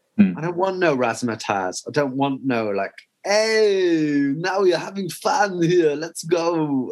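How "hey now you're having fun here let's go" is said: high, flashy glamorous hype, drawn-out hey. Describing what they don't want, the speaker mimics a random glamorous footballer. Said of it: "that was my impression of a random, glamorous footballer".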